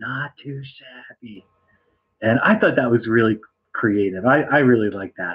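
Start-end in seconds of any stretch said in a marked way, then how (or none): 0.0-1.5 very soft, quiet, barely-there half-whisper. Retelling saying the catchphrase near sleeping children: imitating own half-whisper. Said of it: "So I had to whisper it".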